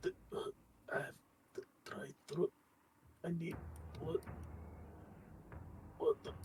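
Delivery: five-packs-a-day voice. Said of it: "Now you sound like you smoke five packs a day".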